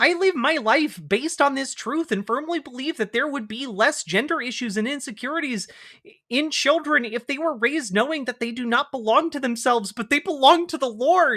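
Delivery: put-on frog puppet voice. Reading an article aloud, as requested, in Jordan B Peterson voice. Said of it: "my best Jordan B Peterson voice".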